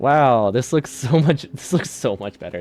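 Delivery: loud admiring tone that tips into sarcasm. Reacting to things finally working, sounding sarcastic. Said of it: "That sounded a lot more sarcastic than I meant it to sound".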